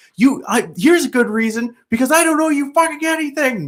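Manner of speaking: shrill, very high, furious ranting shout. Retelling yelling at a young man standing in the way of the car; retelling a yell. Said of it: "started yelling like".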